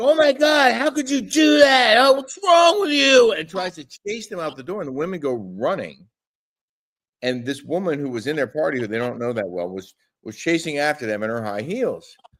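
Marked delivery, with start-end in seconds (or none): 0.0-3.3 very high, shrill, loud, drawn-out screaming outburst. Retelling how a woman in the group reacted: imitating someone screaming. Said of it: "starts screaming at them".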